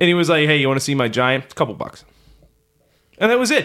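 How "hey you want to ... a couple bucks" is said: ordinary talk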